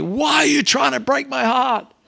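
acted scream, very high, ragged and rough. Retelling what mum screamed at a defiant child: imitating mum screaming. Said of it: "my mum screaming out at me".

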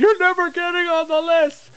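piercing, very high, shrill yelling. Speaker acts out what they'd yell at an opponent in the ring, acting out a yell. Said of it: "I'm going to build the anticipation by just yelling".

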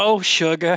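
put-on sweet, kindly, gentle little old lady voice. Showing the others your own version of Dolly, voiced as a gentle old lady. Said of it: "My version of Dolly is just like just an old gentle lady".

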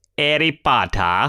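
clumsy, bad, put-on British accent. Jokingly correcting a pronunciation, bad put-on British accent. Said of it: "That offensive attempt at a British accent".

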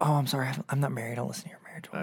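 put-on earnest, sorry-sounding, apologetic voice. Retelling what podcast listeners say when they meet: imitating an apologetic listener. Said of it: "It's always apologetic".

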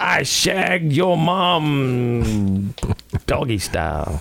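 acted very slow, drawled drunken voice, taunting tone. Telling a pub joke, imitating a loud drunk heckling a man.

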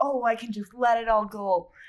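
put-on odd, vaguely Irish accent slipping in. Speaker voicing a hypothetical thought mid-discussion, in a weird accent. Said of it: "That sounded like a weird accent".

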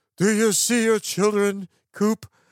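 put-on theatrical, old-fashioned stage villain voice. Mocking an actor's line to a co-star in a film, Matt Damon as Shakespeare villain. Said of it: "he sounds like a Shakespeare villain".

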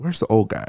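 hushed, quiet half-whisper. Retelling a movie scene where people on set half-whisper: imitating people half-whispering. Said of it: "you just kinda hear people whispering".

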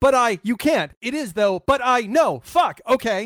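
slow, stumbling, odd delivery. Showing how to recover when lost in a Mamet play: improv Mamet impression.

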